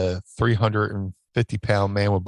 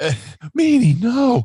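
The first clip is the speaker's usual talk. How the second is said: loud cry pitched very high; 6 dB louder than usual. Retelling what someone said on seeing the speaker on the plane: Mick Foley impression. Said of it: "he just looks at me and goes".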